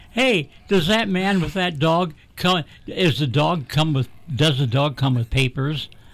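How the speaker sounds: ordinary talk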